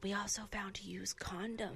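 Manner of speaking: hushed, very quiet, slow grandma-voice whisper. Retelling what grandma said about a hotel room: imitating grandma whispering. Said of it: "she's, like, whispering".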